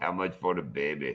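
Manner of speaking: dropped way low, very deep and very hushed. Showing Stu how a movie line should be said, in a deeper voice. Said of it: "You gotta say it with a deeper voice".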